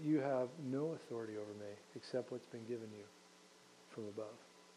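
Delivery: hushed, composed, very quiet and calm. Retelling the scene, the speaker gives Jesus's answer to his accuser: retelling a calm reply. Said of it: "Jesus just calmly says".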